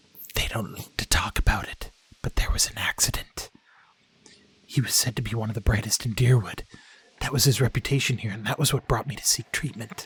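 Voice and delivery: hushed voice, just above a whisper. Telling a visitor about a troubled healer's past: just above a whisper. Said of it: "Her voice lowers to just above a whisper".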